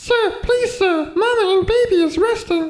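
very high, slow, squeaky little elf voice. As the bedroom door opens, an elf addresses the man entering, high and squeaky. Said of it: "came the high, squeaky voice of an elf".

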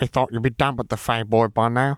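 nasally voice, spoken through the nose. A second figure held in someone's arms explains to the others, in a nasal voice. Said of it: "explained a second nasal voice".

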